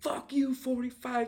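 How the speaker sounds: very high, acted-out screaming outburst. Telling others about a neighbor, acting out her yelling; retelling a scream. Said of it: "And she screams".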